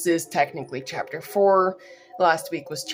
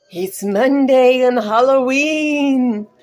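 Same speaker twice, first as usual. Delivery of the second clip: creepy put-on voice, much higher, louder, slower; 8 semitones higher, 8 dB louder than usual. Greeting listeners on a halloween monday in a creepy voice. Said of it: "I don't know why I had that creepy voice".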